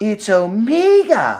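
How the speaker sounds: slight put-on British lilt, "Omega" drawn out. Retelling how she pronounces the name, with a put-on British inflection. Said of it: "she says it with like that British inflection".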